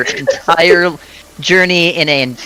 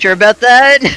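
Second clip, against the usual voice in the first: utterly unconvincing, pitched-up, acted-out delivery; 7 semitones higher, 4 dB louder than usual. Narrating a game scene where Thorin questions someone, unconvincing Thorin line. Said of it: "In the most unconvincing voice ever".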